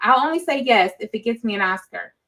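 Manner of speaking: ordinary talk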